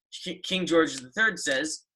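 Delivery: plain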